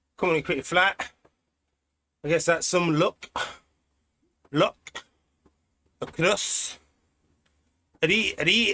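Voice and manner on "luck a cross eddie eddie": rough attempt at a put-on Scottish accent. Riding a virtual course, trying out his best Scottish accent. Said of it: "that's the best I can do of a Scottish accent".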